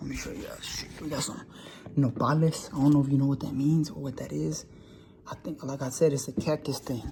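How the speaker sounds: slight, hushed, half-whispered soft voice. Filming a video, showing viewers the food, unsure who's around: whispering a little. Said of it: "I'm whispering a little bit".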